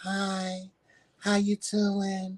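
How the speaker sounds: cute, sweet small voice, very slow. Describing how Joseph always talked, the speaker uses Joseph's sweet little voice. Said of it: "in this sweet little voice".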